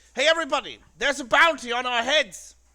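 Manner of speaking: loud shouting. Acting out a character warning a whole street of a bounty: shouting out to everyone. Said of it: "I'm just gonna shout out".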